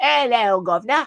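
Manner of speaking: put-on thick, super cockney accent. Describing the Pygmalion story, imitating the street urchin in a super cockney accent. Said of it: "she's like super cockney".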